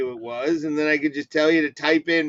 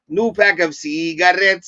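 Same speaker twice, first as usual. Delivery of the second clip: fake Mexican accent, louder and slower; 3 semitones higher, 5 dB louder than usual. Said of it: "you're putting on a Mexican accent right now?".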